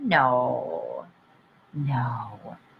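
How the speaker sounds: very low, drawn-out, seductive sexy voice. Answering a challenge to say no in a certain way: sexy "no". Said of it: "can you say no and be really sexy about it".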